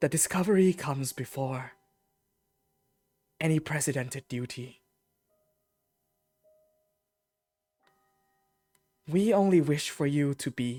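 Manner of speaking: very pleased, almost sobbing. Voicing a mother replying to a letter: very pleased, almost mid-sob voice. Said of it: "very pleased, almost mid-sob voice".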